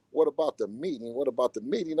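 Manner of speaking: usual speaking voice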